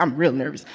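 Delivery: very low, dropped comedian-style voice. Telling listeners about feeling nervous, switching into a Bernie Mac voice. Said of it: "In my Bernie Mac voice".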